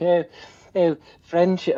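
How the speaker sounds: attempted British accent. Guest quoting an Olympic rowing coach, doing a best British accent. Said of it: "I'm doing my best British accent".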